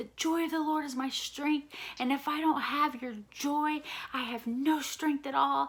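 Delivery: high, screamed aloud. Retelling marching back and forth praying: retelling screaming at god. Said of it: "I was just screaming back and forth".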